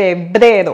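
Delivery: febrero with the second E stressed, low.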